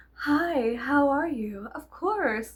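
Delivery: put-on, very articulate voice, high and slow.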